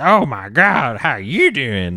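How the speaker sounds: big, animated, swooping, sing-song character voice. Describing an offensive character, the speaker imitates how she talks. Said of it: "she talks like this".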